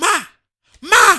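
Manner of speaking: shrill, very loud, high-pitched full-volume shouting. Recalling a dad shouting on phone calls to Nigeria, imitating the shout. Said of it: "why are you shouting at her?".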